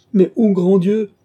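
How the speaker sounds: anguished outcry, shrill, very high and very loud. A young man, just told he is free to go wherever he likes, crying out in anguish. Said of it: "s'écria Gilbert, abîmé dans sa douleur".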